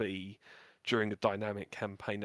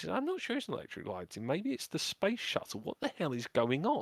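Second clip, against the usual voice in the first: put-on confused tone, much higher pitch; 7 semitones higher than usual. Retelling what a flight member said during a game, acting out confusion. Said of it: "you could sort of hear the confusion in his voice".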